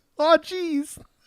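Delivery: very high-pitched cartoonish voice. Joking about a voice in the footage: Morty voice. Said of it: "Sounds like Morty from Rick and Morty".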